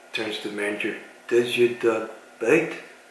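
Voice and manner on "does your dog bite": put-on French-accented voice. Retelling a scene from The Pink Panther in Inspector Clouseau's French accent. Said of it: "of course in a French accent".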